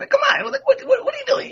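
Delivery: very high-pitched voice. Showing the voice he and his friends use among each other: baglander voice. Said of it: "it kind of goes like this".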